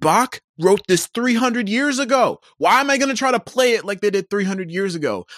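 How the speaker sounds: high, mild mock yell. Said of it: "I just wanna yell into the void".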